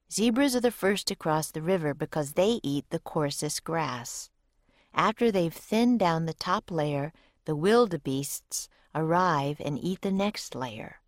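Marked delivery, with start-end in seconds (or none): none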